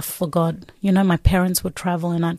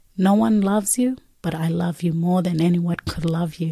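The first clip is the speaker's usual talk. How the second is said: put-on gentle, soft, softly spoken voice. Retelling what a voice said to them while kneeling, imitating a soft voice. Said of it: "I can just hear soft voice saying".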